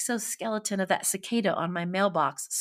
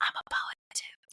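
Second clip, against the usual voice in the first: soft, breathy, barely voiced whispered aside. Retelling what a man whispered to her across the counter; imitating a whisper. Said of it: "Like he like whispered to me across the counter".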